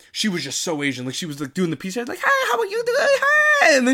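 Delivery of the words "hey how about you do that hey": put-on raised high-pitched girl voice. Acting out how the girl with the robot talked in Spider-Man, Peni Parker voice. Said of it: "You did that way too good".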